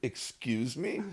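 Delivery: offended, indignant, angry retort. Retelling how they replied to a shop clerk when annoyed, re-enacting the moment. Retelling own angry reply. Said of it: "this bitchy French woman".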